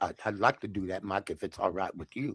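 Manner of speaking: very quiet, hushed, almost under-breath voice. Retelling a phone call inviting a guest onto the show: Jesse Jackson impression. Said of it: "That's how he talked".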